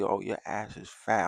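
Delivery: drawn-out, slow, flirty whisper. Retelling whispering into her friend's ear, retelling a flirty whisper. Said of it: "I'm whispering down her ear like".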